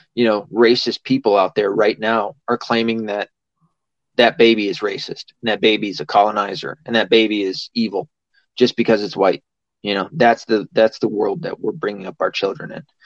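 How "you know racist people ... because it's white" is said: ordinary talk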